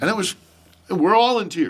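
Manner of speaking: ordinary delivery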